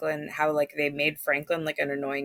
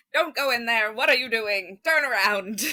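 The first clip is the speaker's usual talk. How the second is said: put-on higher-pitched old-timey Hollywood movie-star accent; 7 semitones higher, 4 dB louder than usual. Describing a movie that held their attention, the speaker acts out their reaction in an old-timey Hollywood accent. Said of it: "In an old timey Hollywood accent".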